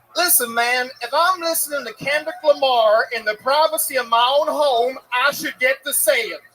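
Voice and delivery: put-on American accent. Asked by the host for another example: doing an American accent. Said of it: "give us an example of some more in your American accent".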